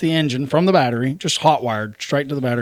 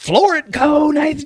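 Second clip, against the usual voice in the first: mock screaming, much higher pitch; 12 semitones higher than usual. Speaker retells the listener's wife screaming at him on a difficult trail; imitating someone screaming. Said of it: "screaming at me".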